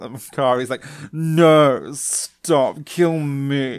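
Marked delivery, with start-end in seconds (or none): 1.1-3.8 put-on girl voice, higher. Retelling a scene, quoting Kari begging to be killed: Kari impression. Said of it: "So many impressions".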